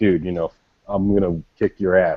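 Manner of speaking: plain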